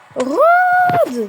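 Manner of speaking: loud high-pitched yelling.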